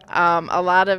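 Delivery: schoolteacher tone. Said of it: "my mom voice, I call it".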